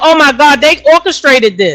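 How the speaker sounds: ordinary talk, nothing marked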